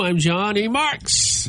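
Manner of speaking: very slow, drawn-out baseball stadium announcer voice. Radio host signing off and giving his own name, baseball announcer voice. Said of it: "I was trying to say it like a baseball announcer".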